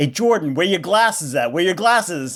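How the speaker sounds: put-on cheeky small child voice, yelled out. Retelling how their small kid would shout at a man on the porch, imitating Ruby yelling. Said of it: "like yelling".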